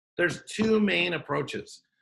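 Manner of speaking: very slow, deliberate delivery.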